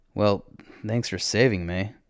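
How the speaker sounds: plain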